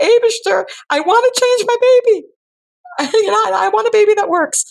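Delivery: sobbing through tears, voice very high. Retelling breaking down by a baby changing station, retelling her own crying. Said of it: "and I'm crying".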